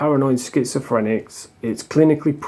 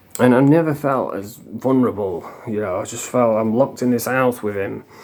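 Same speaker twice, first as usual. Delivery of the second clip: ordinary talk, nothing marked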